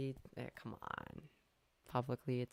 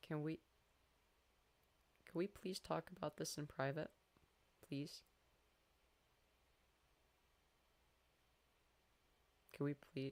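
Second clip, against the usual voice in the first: tearful voice, crying while talking; 3 semitones higher, 3 dB quieter than usual. Pleading on stream with someone to talk in private, crying while talking. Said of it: "I'm crying on f-, stream".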